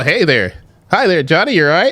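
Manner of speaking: polite, formal business phone voice. Speaker demonstrating code switching, polite business-call voice. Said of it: "You make a business call".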